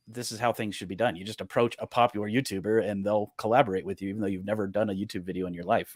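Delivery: ordinary delivery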